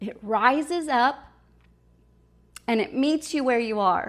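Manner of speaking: choked up, voice catching with emotion. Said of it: "why am I getting so choked up".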